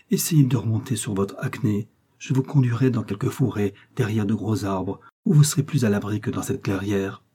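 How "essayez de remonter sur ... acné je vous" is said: plain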